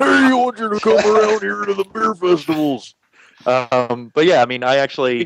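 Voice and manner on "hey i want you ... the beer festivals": clumsy, deliberately bad, squeaked very high put-on voice. Redoing the beer festival producer's line: bad Rolf impression. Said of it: "why did he sound like a bad impression of Rolf?".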